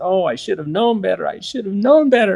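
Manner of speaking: play-acted, tearful, sobbing voice almost in tears. Retelling a caller's reply on the phone: imitating someone sobbing. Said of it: "in a tearful voice, almost in tears, she began to sob".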